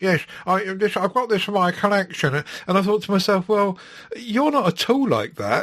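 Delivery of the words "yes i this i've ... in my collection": put-on, played-up geeky, nerdy voice. Imitating film reviewers on YouTube talking about their collection, in a nerdy voice. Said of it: "they talk in a nerdy voice and say".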